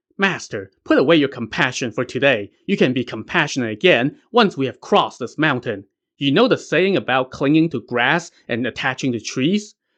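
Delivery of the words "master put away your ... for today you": ordinary delivery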